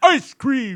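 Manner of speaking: loud, high-pitched, belted cartoon voice. Trying the voice again after being doubted: Homer Simpson voice. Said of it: "That sounds like Homer Simpson".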